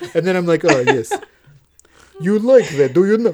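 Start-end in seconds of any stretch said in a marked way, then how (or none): 2.2-3.3 poor, clumsy, put-on Russian accent. Showing the bad russian accent used for a podcast character. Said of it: "in a bad Russian accent".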